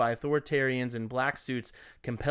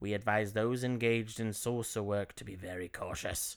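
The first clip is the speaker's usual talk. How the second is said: put-on accent of Bridgeport; 4 semitones lower, 6 dB quieter than usual. Reading out a 1956 magazine statement the way its author sounded, Bridgeport accent. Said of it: "It's a Bridgeport accent".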